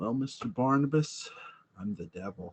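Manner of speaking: calm, composed, soft, hushed narrator voice. Picturing an actor cast as the Devil: calm Rod Serling voice. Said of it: "this calm voice telling you".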